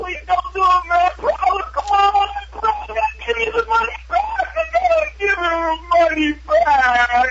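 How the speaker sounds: put-on desperate screaming. Retelling begging a man not to cut off his finger, retelling a screaming plea. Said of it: "And I'm screaming".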